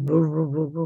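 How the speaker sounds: deep, low, booming, muffled rumbling voice.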